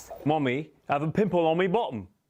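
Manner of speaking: put-on British accent. Asked for a typical british accent they know, the speaker does a put-on british accent. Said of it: "what is like a typical British accent that you're familiar with?".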